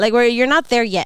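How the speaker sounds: usual speaking voice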